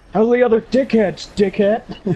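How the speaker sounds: put-on gruff old man impression. Imitating a friend's dad heard complaining in the background: gruff old man voice. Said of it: "gruff, uh, uh, old man voice".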